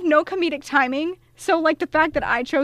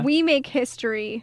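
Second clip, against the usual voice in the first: ordinary talk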